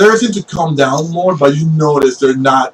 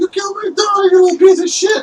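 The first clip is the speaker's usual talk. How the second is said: very high, grief-stricken voice. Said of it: "one of them just goes like".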